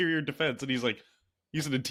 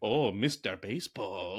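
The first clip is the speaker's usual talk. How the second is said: mock, weirdly exaggerated, deranged, low, over-the-top mocking voice; 6 semitones lower than usual. Describing a show character hounding another, imitating over-the-top taunting. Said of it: "he is like really weirdly over the top".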